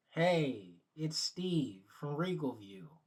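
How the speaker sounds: full put-on office phone voice.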